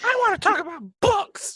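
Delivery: very loud high voice. Doing another player's voice as a joke: Rachel's voice. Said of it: "Look at my voice work".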